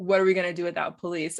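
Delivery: dry, sarcastic, mock scoffing throwaway tone. Retelling backlash heard about replacing police: imitating a sarcastic tone. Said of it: "kinda sarcastically".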